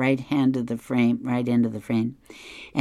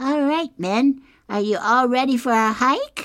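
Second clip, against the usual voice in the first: upbeat, positive, bright, very high voice; 12 semitones higher than usual. Retelling a comic, Snoopy addresses two Woodstocks in his positive voice. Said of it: "Snoopy says in his positive voice".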